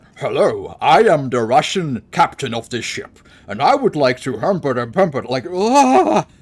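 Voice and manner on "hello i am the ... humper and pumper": put-on speaking in a Scottish accent. Imitating Sean Connery playing a Russian captain: Sean Connery Scottish accent. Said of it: "he speaks in his Scottish accent like".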